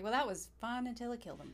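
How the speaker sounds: normal talking voice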